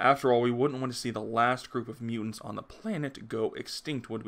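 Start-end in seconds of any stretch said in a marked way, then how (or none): none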